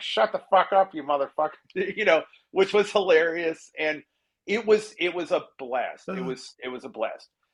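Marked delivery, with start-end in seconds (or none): 0.0-2.2 put-on cartoon voice with mock yelling. Retelling a man quieting an out-of-control crowd between commercials: yelling as Peter Griffin. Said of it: "he started yelling at them as Peter Griffin".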